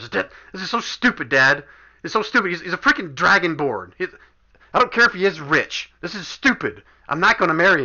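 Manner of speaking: furious, high-pitched, angry shouting. Voicing a woman who storms off yelling at her father, angry yelling. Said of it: "you could hear her yelling at her father".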